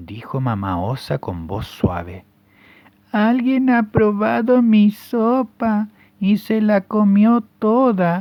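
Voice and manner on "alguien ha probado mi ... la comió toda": put-on very high, raised, teeny bear cub voice. Reading the three bears story aloud, voicing the little bear in a tiny voice. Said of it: "dijo el osito con voz chiquitita".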